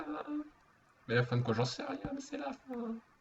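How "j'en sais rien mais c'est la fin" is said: high, wailing mock sob. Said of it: "Pourquoi tu pleures?".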